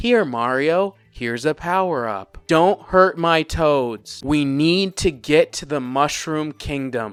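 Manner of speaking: flat, slow delivery, like reading a script. Imitating Anya Taylor-Joy's line delivery as Princess Peach: flat script-reading voice. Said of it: "sounds like she's reading directly from the script".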